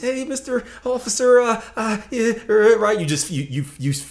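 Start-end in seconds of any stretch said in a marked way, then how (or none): 0.0-2.8 mock very high, slow, halting nervous stammer. Acting out talking to an officer who comes to the window: imitating a nervous driver. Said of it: "you'd be all nervous".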